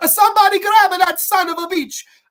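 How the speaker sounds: put-on very high, very loud, shrill Italian accent. Retelling a movie scene, the speaker quotes a bystander in an italian accent. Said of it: "like a great Italian accent".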